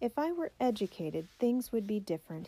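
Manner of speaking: ordinary delivery, nothing marked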